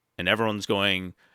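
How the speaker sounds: ordinary delivery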